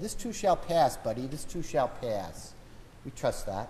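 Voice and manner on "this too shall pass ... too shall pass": put-on, really thick Boston accent. Speaker quoting the saying his dad would repeat, imitating dad's heavy Boston accent. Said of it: "as my dad would say with his really heavy Boston accent".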